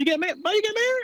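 high, fast burst of surprised disbelief.

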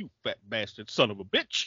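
quiet muttering under the breath. Retelling a film scene where a character insults someone: imitating someone muttering under his breath. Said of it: "he mutters it under his breath".

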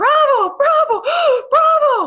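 very high, very loud panicked shriek. Speaker retells a woman screaming a code over the PA: imitating a panicky scream. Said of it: "this panicky voice screaming into the microphone".

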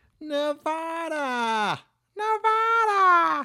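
high-pitched mock voice. Workshopping impressions with the others, the speaker does a high-pitched impression. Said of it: "He's more high-pitched".

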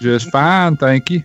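put-on Southern accent. Answering a greeting jokingly in a put-on Southern accent. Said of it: "I love the Southern accent".

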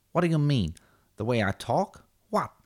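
loud, tough-guy gangster voice. Acting out Forrest Gump meeting Tommy DeVito, playing DeVito's side in a Tommy DeVito voice. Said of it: "when Forrest Gump met Tommy DeVito".

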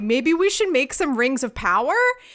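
ordinary talk, nothing marked

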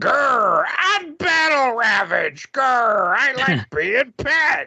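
dopey, very high, swooping, slow, silly creature voice. Mocking a voice actor playing Battle Ravage: imitating goofy Battle Ravage voice. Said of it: "some dipstick would come on and be like".

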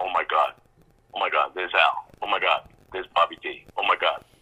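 fake panic, slowed down. Speaker recalls getting on set with Ray Romano, retelling his excited panic. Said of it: "Calm down".

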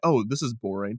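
ordinary talk

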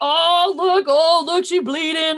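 high, loud, mocking gawking tone.

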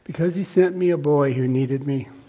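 ordinary delivery

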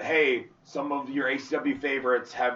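plain

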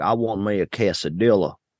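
put-on cowboy-style Texas accent. Picturing a Texan guy who wants a quesadilla: Texan cowboy accent. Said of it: "I like to say it with a cowboy accent. ... I'm picturing a Texan guy that's like".

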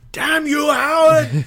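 overdramatic anguished cry. Showing how the line should have been sold: Planet of the Apes style cry. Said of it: "end of the Planet of the Apes sort of thing".

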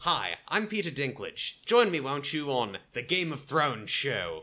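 slow, drawling put-on Australian accent. Joking about the Game of Thrones show, doing a Peter Dinklage impression with Australian accent. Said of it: "I don't know why he's Australian".

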